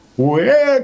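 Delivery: very high, despairing, drawn-out desperate shout. The forest spirit, threatened with shooting, lets out a desperate cry. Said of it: "отчаянно крикнул леший".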